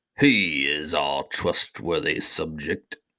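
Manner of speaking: slow, unhurried, dignified, stately regal tone. Reading a story, the king vouches for Glump before the crowd, slow and stately. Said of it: "said the king himself in a slow and stately voice".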